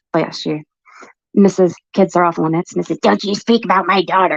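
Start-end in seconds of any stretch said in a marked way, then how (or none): 1.3-4.3 mocking, mimicked put-on voice. Mimicking another speaker's words to mock her: mocking imitation of someone. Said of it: "Why are you mimicking me".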